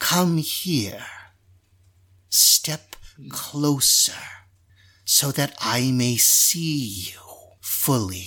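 put-on chittering spider creature voice. Voicing a spider creature speaking to a warrior: chittering spider creature voice. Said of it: "it does seem to be chittering and coming from this spider creature".

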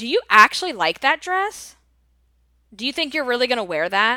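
falsely curious, needling, passive-aggressive inquisitive tone. Retelling a gift-opening party, the speaker mimics a woman's passive-aggressive question. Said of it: "she said it with such this inquisitive tone but it was like this passive aggressive tone".

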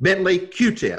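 very stern tone. Speaker retells the colonel's two-word answer to his question, retelling a stern reply. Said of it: "in a very stern voice".

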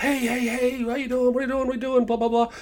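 very high, happy, hollered, loud voice. Retelling a friend greeting across a parking lot: imitating someone hollering. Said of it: "Starts hollering".

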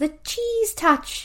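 slow, high, drawn-out viral trend voice.

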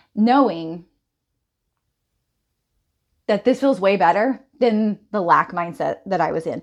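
voice holding back tears, not breaking down. Speaker reflecting on recent weeks of personal development, holding back tears. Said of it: "and I'm trying not to cry".

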